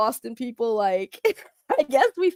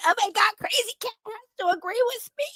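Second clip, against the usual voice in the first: very high, whiny crybaby voice; 11 semitones higher, 3 dB quieter than usual. Mocking a crybaby who needs agreement: mock crybaby whining. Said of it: "be a crybaby and be like".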